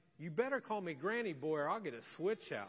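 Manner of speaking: imitated stern, threatening tone. Retelling an elderly woman's reply on being introduced: imitating a stern warning. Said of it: "she looked at me very sternly".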